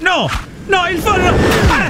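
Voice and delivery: screaming in pain and panic.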